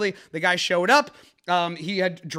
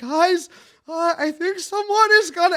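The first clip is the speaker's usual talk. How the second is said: socially anxious, meek, timid voice, pitched up; 11 semitones higher, 4 dB louder than usual. Retelling what an anxious guy said to the group, imitating a timid voice. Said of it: "like the most timid".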